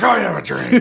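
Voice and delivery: very high comic voice, way up in pitch. Delivering the "I have a dream" line: Alex Jones voice. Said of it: "Just Alex Jones voice".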